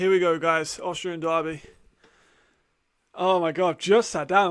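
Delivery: out of breath. Host starting the show just after getting off the bike, out of breath. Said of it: "I'm still out of breath from getting off the bike".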